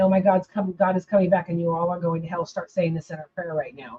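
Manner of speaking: fast, tearful, terrified, crying voice. Retelling a childhood panic, telling the neighborhood kids they must pray: imitating own childhood crying. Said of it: "went from playing kickball in the courts to crying, going".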